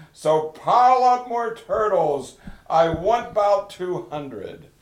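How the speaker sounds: thundering booming kingly voice, pitched high. Narrator reads the king's order in the story, thundering royal voice. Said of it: "his royal voice thundered".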